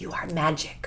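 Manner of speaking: soft, very quiet whisper spoken close to the ear. Showing what they say to the kids at bedtime, re-enacting a whisper. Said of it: "I'm like whispering in their ear little things like this".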